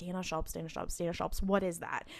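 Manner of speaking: hushed whisper to oneself, under the breath. Retelling a TV scene where a character repeats a name: imitating someone whispering. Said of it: "he's whispering to himself".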